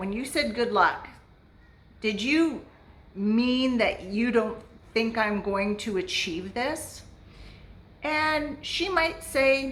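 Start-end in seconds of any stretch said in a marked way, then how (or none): none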